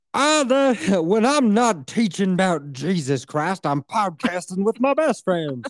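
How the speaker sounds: slow Southern preacher voice with a rhythmic pulpit cadence. Podcaster doing their best friend's voice, imitating Vex as southern preacher. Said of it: "She's like a southern preacher".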